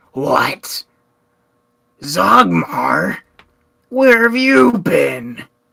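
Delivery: very slow, loud, drawn-out, jolted startled cry. Narrator voices a man jolting awake as Zogmar walks in; startled awake. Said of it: "he kind of like jumps awake".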